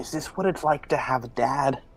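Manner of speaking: soft, half-whispered aside. Leaning over to Poe in character to ask a question: half-whispering. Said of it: "and whisper".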